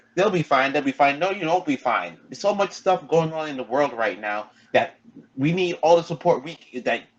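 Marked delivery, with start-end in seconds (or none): none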